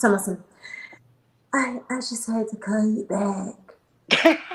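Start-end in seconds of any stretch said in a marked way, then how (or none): 1.5-4.4 mocking, softened, raspy smoker's voice. Retelling a caller who phoned back: imitating a softened raspy smoker's voice. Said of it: "tried to soften her tone with her raspy ass fucking cigarette smoking voice".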